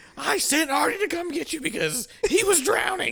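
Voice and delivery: play-acted, very high, loud, furious angry shout. Retelling how a girlfriend confronted the speaker's brother, imitating an angry accusation. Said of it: "just pissed, angry as hell".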